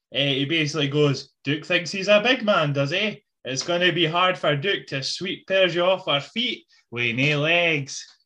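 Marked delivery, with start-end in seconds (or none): 1.5-8.1 put-on Scottish accent. Retelling what Donnie Chen said backstage, doing a Donnie Chen Scottish accent impression. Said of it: "He had the Scottish accent and everything".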